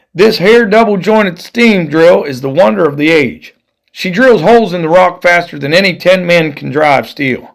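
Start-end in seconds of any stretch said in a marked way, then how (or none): none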